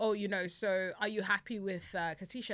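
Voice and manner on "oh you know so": ordinary delivery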